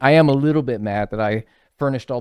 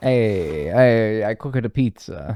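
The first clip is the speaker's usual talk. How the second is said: very slow, drawn-out put-on Italian accent. A video host jokes to viewers in an italian accent impression. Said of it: "That's my Italian impression".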